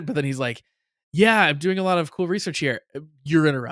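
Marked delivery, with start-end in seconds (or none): none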